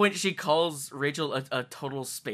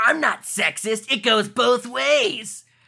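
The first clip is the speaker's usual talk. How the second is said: sleazy, pervy cartoon-villain voice, high and loud; 7 semitones higher, 6 dB louder than usual. Mocking a Yu-Gi-Oh villain's lines, done in a Sheen-like villain voice. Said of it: "every one of those lines sounds even fucking skankier".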